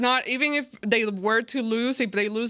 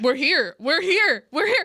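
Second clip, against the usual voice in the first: panicked, freaking-out voice at a higher pitch; 5 semitones higher, 3 dB louder than usual. Retelling waking up on game morning, imitating own freaking out. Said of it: "And I'm freaking out".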